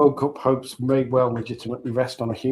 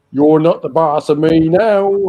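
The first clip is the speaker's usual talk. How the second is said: attempted West Country accent, loud and slow; 3 semitones higher, 7 dB louder than usual. Joking about Farmer Mulch: attempted West Country accent. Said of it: "it was an attempt at West Country".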